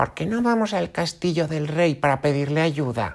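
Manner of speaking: put-on very high, elderly village woman voice. Reading a story, the oldest woman of the village proposes a plan, old woman's voice. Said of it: "la anciana más vieja de la aldea propone".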